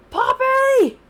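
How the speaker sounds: loud high-pitched shout.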